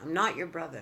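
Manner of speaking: ordinary delivery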